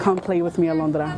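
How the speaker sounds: usual speaking voice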